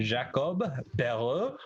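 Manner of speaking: put-on the name given a French Canadian accent. Discussing a hockey prospect, saying his name in a french canadian accent. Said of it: "My French Canadian accent?".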